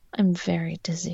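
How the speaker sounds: whispering. A girl answers someone calling her name in class, whispered. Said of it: "she whispered".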